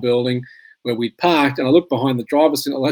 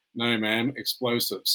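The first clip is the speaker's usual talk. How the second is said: put-on cold, dry, flat voice, lower, quieter; 2 semitones lower, 11 dB quieter than usual. Recounting the woman's answer to his Dutch wife, imitating a cold, dry voice. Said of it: "says in a very cold, dry voice".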